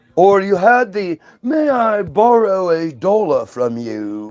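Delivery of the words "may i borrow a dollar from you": polite, put-on, uppity Carolina Southern accent. Describing polite Southern people of the past, doing an uppity Carolina Southern accent. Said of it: "those Carolina Southern people that are like uppity".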